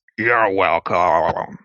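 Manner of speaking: strange, weird, warped and distorted voice. Narrator voices an unseen figure answering a thank-you, in a weird distorted voice. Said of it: "a weird, uh, distorted voice say".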